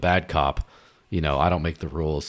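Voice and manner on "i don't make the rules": ordinary talk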